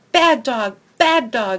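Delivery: furious, loud, scolding angry yell. Reading a story aloud, Angel jumps back and yells at the dog; yelling. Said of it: "She yells".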